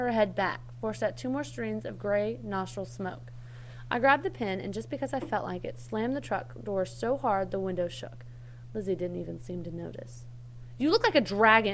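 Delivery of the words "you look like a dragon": hollered out at full volume. Reading a story, the narrator shouts at a woman sitting in the truck: shouted. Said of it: "I shouted".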